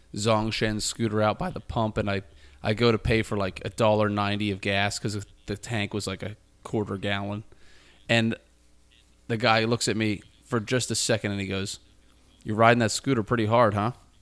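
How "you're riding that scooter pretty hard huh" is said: snide, mocking, sarcastic tone. Retelling what the guy at the gas pump said about his scooter, mimicking a sarcastic jab. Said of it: "was he being sarcastic?".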